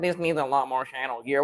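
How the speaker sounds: nasally speaking. Speaker thinks aloud to himself, nasal voice. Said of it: "Why the fuck does my voice get so nasally?".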